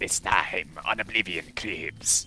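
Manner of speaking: lizard-folk creature voice. Announcing "Oblivion Cribs" as asked, in an Argonian voice. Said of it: "It's gotta be, like, an Argonia voice".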